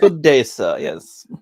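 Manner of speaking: put-on very loud, belted-out British accent. Speaker imitates Ethan Van Sciver with a put-on British accent. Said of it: "he gets a British accent".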